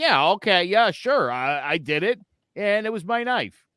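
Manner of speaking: put-on slow, caving, going-along, agreeable tone. Acting out a suspect who gives in to cops: imitating a suspect confessing. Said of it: "And people are like".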